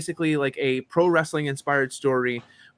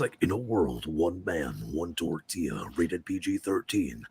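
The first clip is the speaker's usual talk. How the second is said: very deep, low movie trailer announcer voice; 9 semitones lower, 7 dB quieter than usual. Talking about editing game dialogue, showing off the movie trailer voice they're good at. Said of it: "I've always been good at that movie voice".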